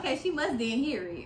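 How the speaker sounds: ordinary talk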